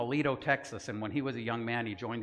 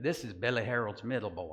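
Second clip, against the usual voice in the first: put-on Texas accent. Retelling how everybody introduced him, in his Texas accent. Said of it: "I'm going to try this in my Texas accent".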